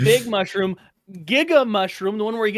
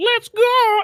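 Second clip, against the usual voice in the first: put-on robot character voice, higher-pitched and louder; 12 semitones higher, 4 dB louder than usual. Imagining asking Bumblebee for help, in a Bumblebee impression. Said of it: "was that your Bumblebee impression?".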